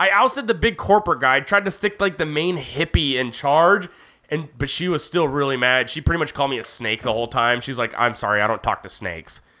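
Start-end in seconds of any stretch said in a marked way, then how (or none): 8.0-9.4 put-on very deep, super sassy voice. Speaker retells a woman's reply after ousting the corporate guy, mock-sassy retelling. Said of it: "super sassy about it".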